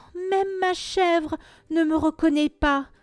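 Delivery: sorry, plaintive, complaining, lamenting tone. The little man in galoshes, after the goat disputes him; complaining. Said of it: "se plaignit le petit homme aux galoches".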